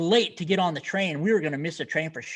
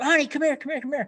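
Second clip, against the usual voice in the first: put-on scream, pitched higher; 9 semitones higher than usual. Retelling a fan in an airport line calling his wife: imitating a man screaming. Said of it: "He screams at his wife".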